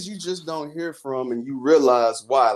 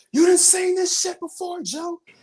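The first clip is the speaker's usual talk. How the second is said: put-on wrestler screaming, higher pitch. Retelling a wrestling match moment, imitating Roman Reigns screaming. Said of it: "he just screamed out of nowhere".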